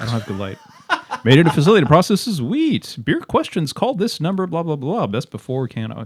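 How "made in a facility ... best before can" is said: pitched-up radio announcer delivery. Asked to read the side of the can aloud: radio announcer voice. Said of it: "read the side of the can here in your radio voice".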